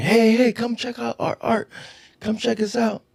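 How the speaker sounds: play-acted vendor hawking shout, very high pitch. Retelling how an art seller down the hall called them over: imitating a vendor shouting. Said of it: "shouting at us".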